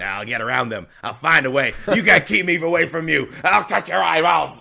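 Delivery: pushy, loud, aggressive, in-your-face fly voice. Playing the fly who wants to touch eyeballs: aggressive fly voice. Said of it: "That was an aggressive fly".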